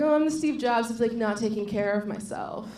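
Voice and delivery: ordinary talk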